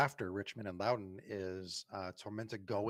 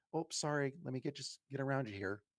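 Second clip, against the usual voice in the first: high, put-on Midwest polite voice; 5 semitones higher than usual. Imagining getting past an opponent at a corner kick: put-on Midwest politeness. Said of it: "Midwest polite".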